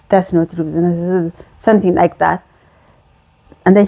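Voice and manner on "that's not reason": acted mumble, lower and quieter. Retelling his answer to her questions, imitating mumbling. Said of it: "he mumbling".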